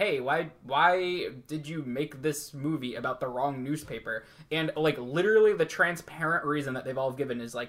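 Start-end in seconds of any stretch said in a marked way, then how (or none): none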